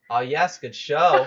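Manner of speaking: very loud, drawn-out, playful teasing mockery. Voicing Nox praising a strike from behind: playfully mocking tone. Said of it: "in a mocking, but, like, mocking in a playful way sort of tone".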